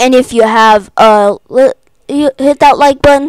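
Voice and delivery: stuttering. Signing off a video to viewers, stuttering. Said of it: "Sorry, I'm stuttering".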